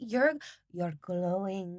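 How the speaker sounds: clumsy, put-on attempt at a French accent. Retelling what a film character says, attempted French accent. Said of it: "I can't do a French accent".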